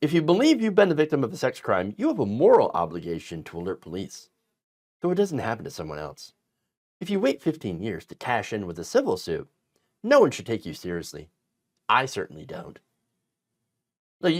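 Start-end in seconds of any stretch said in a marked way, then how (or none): 0.0-12.8 low, smug, dismissive voice. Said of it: "you can hear that in Carlson's smug voice".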